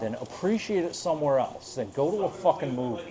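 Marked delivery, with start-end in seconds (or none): none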